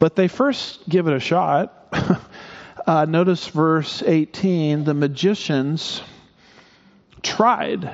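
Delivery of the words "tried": tried stressed high with a falling tune. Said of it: "emphasis on tried".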